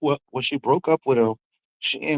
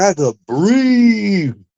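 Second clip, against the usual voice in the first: mocking put-on voice, higher and louder; 7 semitones higher, 5 dB louder than usual. Retelling what she said after the breakup, imitating her saying she feels free. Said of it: "She said it like that, like".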